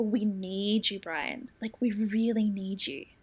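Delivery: slow, coaxing parental voice. Retelling a scene where one character persuades another: coaxing parental voice. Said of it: "the kind of voice that I could imagine him using on Christopher".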